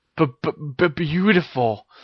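stuttering. Ginny twirls and asks Harry if he likes it; he answers, stuttering. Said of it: "stuttered Harry".

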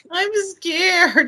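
mock very high, tiny little child's whimper. Retelling a nephew waking at night: imitating a child's little whimper. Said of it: "you get that really little".

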